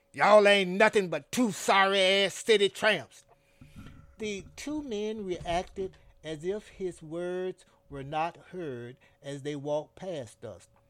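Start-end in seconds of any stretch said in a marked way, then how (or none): 0.2-3.2 very loud, scornful, sneering jeer. Son Bolo to two homeless men passing on the sidewalk; sneering. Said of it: "sneered Son Bolo".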